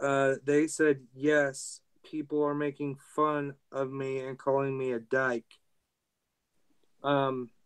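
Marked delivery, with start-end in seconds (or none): none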